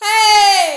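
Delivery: high, belted chest-voice call. Showing a learner the high upper chest belting voice. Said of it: "high upper chest belting voice".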